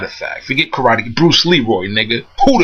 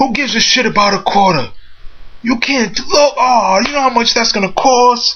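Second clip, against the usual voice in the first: put-on very high Italian accent with broken English; 10 semitones higher than usual. Retelling what Gino the shop owner said, in Gino's Italian accent. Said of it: "his Italian accent".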